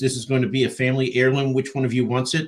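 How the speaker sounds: ordinary delivery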